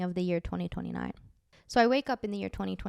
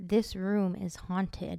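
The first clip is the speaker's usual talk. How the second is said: eerie, creepy put-on announcer speaker voice. Retelling a dream, quoting a speaker from a VCR player: put-on creepy voice. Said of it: "in like a creepy voice".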